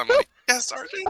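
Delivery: very high, squeaky, nervous squeaking voice. Showing how a small character answers a sergeant: put-on nervous, squeaky Jack voice. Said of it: "like a nervous, squeaky voice".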